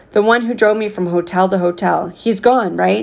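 ordinary delivery, nothing marked

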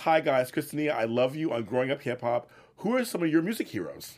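normal talking voice

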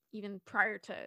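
ordinary talk, nothing marked

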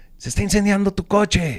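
mock very high, very loud yelled shouting. Retelling how someone shouted at them while driving: retelling a shouted warning. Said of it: "alguien nos gritó".

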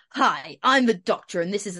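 loud advertisement voiceover voice. Imitating how the Doctor might start a speech, in a Barry Scott voice. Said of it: "that sounded like Barry Scott".

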